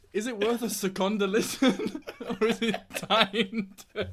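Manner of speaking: talking through laughter. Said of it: "I can't do it".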